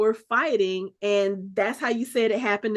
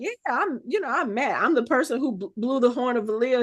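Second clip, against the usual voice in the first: boastful, showing-off, full-of-himself voice. Retelling a TV scene, imitating Mat boasting. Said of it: "him walking around talking about".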